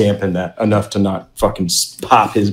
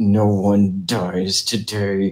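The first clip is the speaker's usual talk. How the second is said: slow, muttered half-whisper under the breath; 4 dB quieter than usual. Voicing a character who pounds his thigh, half-whispering under his breath. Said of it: "whispering under his breath".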